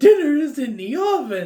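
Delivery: very high, loud, throat-straining put-on character voice. Describing the most annoying Evil Ed in a wig, Evil Ed voice. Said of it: "doing that voice. ... that voice hurt my throat a little bit".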